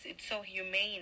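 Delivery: plain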